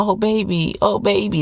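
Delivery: sweet, high feminine voice, very slow and drawn out. Mimicking a woman manipulating her partner, a put-on sweet voice. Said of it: "that sweet voice".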